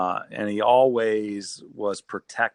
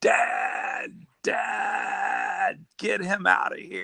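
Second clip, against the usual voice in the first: put-on very slow, high-pitched, drawn-out cry; 11 semitones higher than usual. Retelling a brother's Saturday morning call from the basement: imitating brother screaming. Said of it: "his brother screaming".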